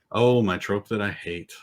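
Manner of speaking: sad, glum, downcast tone. Asked by the co-speaker which trope they dislike, answering sad and downbeat. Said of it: "You sound so sad".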